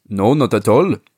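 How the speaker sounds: put-on French accent. Quoting a man's answer to an interviewer from France Football, in a put-on French accent. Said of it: "so I'm doing a French accent".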